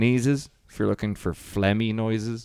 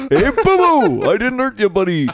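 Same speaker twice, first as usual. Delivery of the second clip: belted high and loud, swooping; 13 semitones higher, 9 dB louder than usual. Doing Hanna-Barbera bits on a podcast, the speaker plays Yogi Bear. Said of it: "Yogi Bear and Boo Boo".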